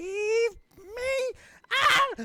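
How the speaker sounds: very loud, very high, booming, shrill woman's shriek. Narrating a game, a voice the players suddenly hear; booming, shrill female voice. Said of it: "hear in this booming, loud, kind of a female shrill voice".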